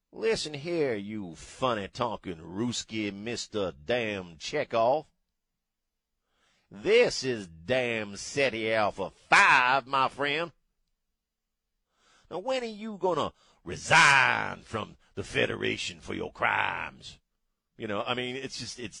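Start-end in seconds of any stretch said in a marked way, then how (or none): 0.2-17.2 thick Louisiana drawl, laid on heavy. Host imagines Khan played by Clay Higgins, Clay Higgins impression as Khan. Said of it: "imagine Khan played by Clay Higgins".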